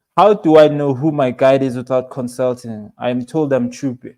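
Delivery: ordinary talk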